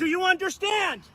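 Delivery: shouting. Demanding in an argument whether the other person understands: yelling. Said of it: "Stop yelling at me".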